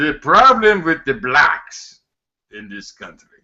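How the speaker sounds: put-on English spoken with a Cuban accent. Talking about Ted Cruz's father, imitating him in a Cuban accent. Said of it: "he's this Cuban accented guy".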